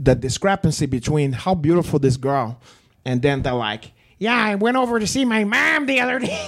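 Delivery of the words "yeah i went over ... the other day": put-on gangster-style Chicago accent, pitched up high. Mocking how a girl from Chicago talks, in a Joe Pesci Casino accent. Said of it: "it sounds like Joe Pesci in fucking Casino".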